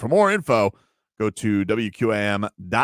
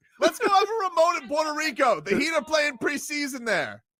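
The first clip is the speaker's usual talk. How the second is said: shouting, high pitched and excited; 3 dB quieter than usual. Calling through an open door to Glenn with a request: yelling. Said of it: "because you're yelling".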